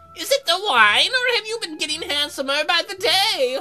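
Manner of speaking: put-on high-pitched elderly woman's voice. Redoing a character's line after deciding she should sound old: old lady voice. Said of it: "she should have an old lady voice".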